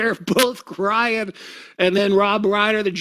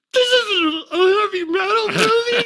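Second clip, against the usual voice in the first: put-on tearful crying voice, higher pitched; 12 semitones higher than usual. Retelling how she complained, halfway through the film, imitating someone crying. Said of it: "she's, like, crying".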